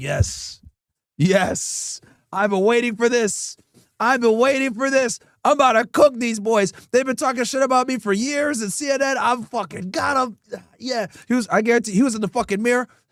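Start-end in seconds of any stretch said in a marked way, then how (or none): 0.0-10.4 eager, gloating news anchor voice. Imagining a news anchor backstage before a broadcast, imitating Jake Tapper gloating. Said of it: "I guarantee you he was just sitting in the back like this".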